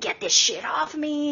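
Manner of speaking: mock all-out screaming, high and drawn-out. Describing a video, the speaker acts out a man screaming. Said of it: "But he's like screaming".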